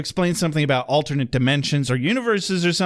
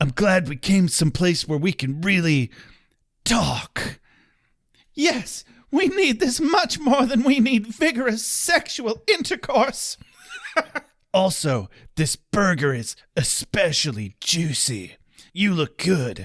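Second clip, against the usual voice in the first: full dramatic, theatrical comic reading, higher; 3 semitones higher than usual. Reading comic panel dialogue aloud after promising a full dramatic reading. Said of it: "dramatic reading".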